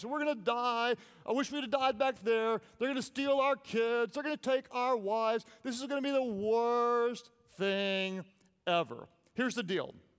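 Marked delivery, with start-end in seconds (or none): 0.1-9.1 mock complaining whine, higher. Retelling how the Israelites complain in the desert: imitating people complaining. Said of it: "they complain".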